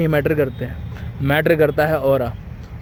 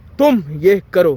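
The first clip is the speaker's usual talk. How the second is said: तुम stressed hard and angrily; 3 semitones higher, 4 dB louder than usual. Teaching how emphasis on a word sounds: angry stress on तुम. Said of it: "मैं तुम word पे जोर दिया है तो गुस्से में बोला है".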